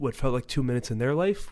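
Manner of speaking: normal talking voice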